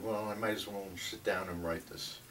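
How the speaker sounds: ordinary talk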